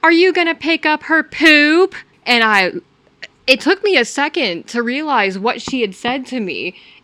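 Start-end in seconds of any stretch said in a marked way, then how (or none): 0.0-1.9 play-acted high yelling, shouted out. Retelling what a passing driver yelled out her car window, imitating someone yelling. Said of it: "this lady yells out".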